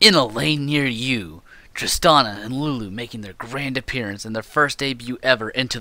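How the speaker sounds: epic, dramatic movie trailer announcer voice. Speaker joins a co-speaker in talking like movie trailers, in epic trailer voice. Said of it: "We should speak as the people do in movie trailers".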